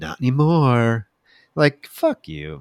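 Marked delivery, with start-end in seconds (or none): 0.0-1.1 put-on smug voice. Retelling a scene where Bradley answers Tim: smugly imitating Bradley. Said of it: "And Bradley smugly says".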